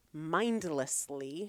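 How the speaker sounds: slow delivery, every syllable stretched long. Explaining that checking out isn't recovery, slow, drawn-out "mindlessly". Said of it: "See what I did there with the diction? ... You really slowed it down".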